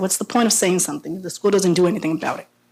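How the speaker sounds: plain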